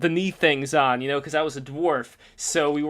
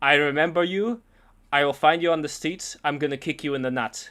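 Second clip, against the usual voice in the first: heavy, thick put-on German accent. Retelling a courtroom heckler threatening a kid; thick German accent. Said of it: "in the thick German accent".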